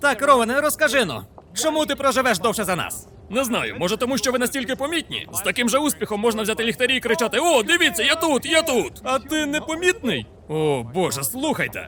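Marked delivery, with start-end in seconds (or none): none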